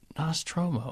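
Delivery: very quiet, soft, gentle, hushed delivery. Coaching a guest to repeat a word, demonstrating it softer. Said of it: "a little bit softer now".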